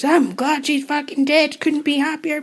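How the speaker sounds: put-on broad Glaswegian accent, pitched high. Retelling someone's remarks to a reporter, in a broad Glaswegian accent. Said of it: "broad Glaswegian accent".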